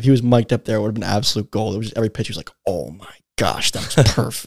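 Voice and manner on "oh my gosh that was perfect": mock under-the-breath muttering, much quieter, slower. Retelling what the batting-practice pitcher said after every pitch, imitating a mutter under breath. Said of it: "But just Jimmy under his breath".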